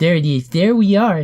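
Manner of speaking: very loud, high, put-on little gnome voice. Trying out the voice your gnomes talk in, gnome voice. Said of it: "All my gnomes talk like this".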